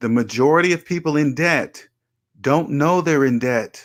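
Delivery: slow, deliberate, spelled out word by word. Repeating a statement one more time for listeners in debt, slow and deliberate. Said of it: "I'm gonna say it slower one more time".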